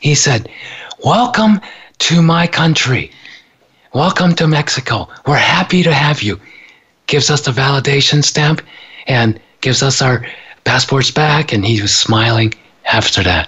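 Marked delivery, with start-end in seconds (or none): 1.0-6.4 acted warm, kindly, loving, welcoming tone. Retelling what the man stamping their passports said, in a loving, welcoming way. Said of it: "in this most loving, welcoming way".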